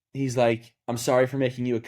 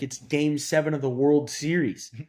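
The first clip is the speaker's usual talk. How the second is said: normal talking voice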